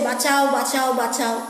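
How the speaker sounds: normal talking voice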